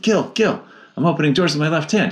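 high, super excited, bursting with excitement. Retelling a phone call to a teacher: imitating own super excited call. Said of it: "I was super excited".

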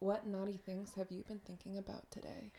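put-on seductive, sultry, breathy-style voice. Asked to let the host hear it, the guest gives their phone sex voice. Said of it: "Let me hear your phone sex voice".

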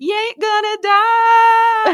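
mock very high, loud scream, "die" drawn out. Recounting being pushed down the hill on a snowboard, retelling her scream. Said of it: "screamed after me".

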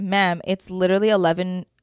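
normal talking voice

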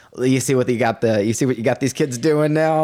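ordinary delivery

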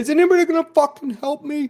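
very high, loud shrieking scream. Acting out a bleeding man in an emergency room, imitating someone screaming. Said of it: "he's like screaming".

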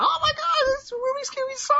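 frantic, very high put-on old woman's voice. Retelling a stranger's reaction to his solved rubik's cube, imitating an old lady freaking out. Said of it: "She started freaking the hell out".

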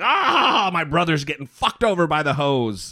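acted, crazed speech through maniacal cackling laughter. Retelling a video of a laughing toddler: imitating maniacal laughing. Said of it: "she's laughing maniacally".

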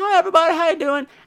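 high, bright, cheery, chirpy voice.

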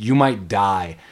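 mock gleeful, happy menace. Retelling a film villain's threat to the hero: imitating a gleeful threat. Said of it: "happy to".

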